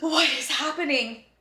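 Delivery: gasping, panicked voice full of disbelief.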